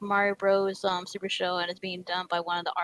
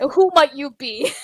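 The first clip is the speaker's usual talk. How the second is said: very loud, pitched-up, solemn, dead-serious mock voice; 6 semitones higher, 10 dB louder than usual. Describing a game character, imitating how he seriously greets you. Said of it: "he sounds so serious".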